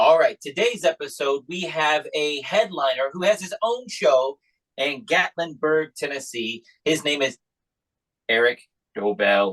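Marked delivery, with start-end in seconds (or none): 8.3-9.5 very low, drawn-out announcer delivery. Introducing today's headliner by name on the episode: deep, slow name announcement. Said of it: "He said I had to say it slow and with a deep voice. That's the best I can do".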